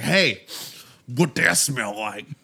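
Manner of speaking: casual, relaxed, flirtatious come-on tone. Acting out a guy walking up to a woman: imitating a guy's pickup line. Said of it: "You sound so good doing it".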